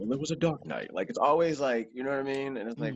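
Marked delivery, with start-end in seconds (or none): 0.0-0.9 storyteller narrator voice, like a film voiceover. Showing how narration sounds in the head: Morgan Freeman voice. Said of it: "it's always Morgan Free-, Freeman".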